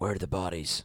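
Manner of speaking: very low, dark caped-hero voice.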